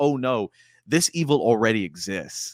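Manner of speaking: ordinary talk, nothing marked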